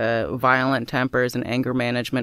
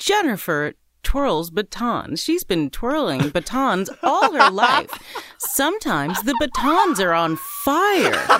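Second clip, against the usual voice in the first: put-on game show announcer voice, higher pitch; 10 semitones higher than usual. Retelling a dating show's introduction of a contestant: imitating a game show announcer. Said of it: "the announcer is like".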